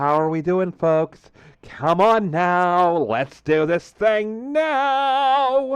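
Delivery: flamboyant, high-pitched, drawn-out fabulous delivery. Showing how he will greet other players in a multiplayer game, [name]'s fabulous voice. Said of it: "[name] with the fabulous voice. This".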